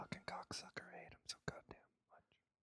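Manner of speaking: muttering under breath. Speaker muttering to himself before his intro, muttering under breath. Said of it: "muttering some things about you under my breath".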